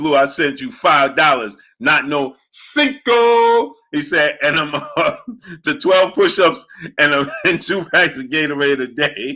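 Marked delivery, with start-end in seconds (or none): none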